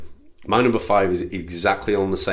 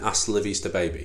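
ordinary talk

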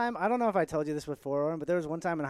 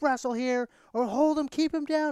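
high, raised shouting voice; 9 semitones higher than usual. Retelling own past coaching: imitating own past yelling. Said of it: "where I was yelling".

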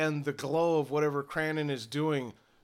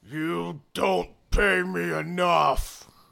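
very slow, loud, rough, drawn-out orc voice; 3 semitones higher, 5 dB louder than usual. Voicing an orc who complains about his pay: orc voice. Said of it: "he looks down and".

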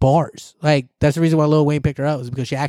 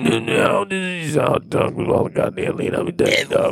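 mocking put-on voice, much higher pitch; 3 semitones higher than usual. Describing a guy's lean habit, the speaker imitates how his voice went. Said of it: "that fool's voice went".

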